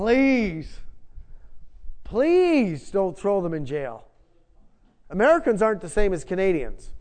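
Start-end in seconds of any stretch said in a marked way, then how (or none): 0.0-4.0 mock-begging, quieter and slower. Recalling a hospital trip with a friend, retelling begging. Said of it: "I was begging".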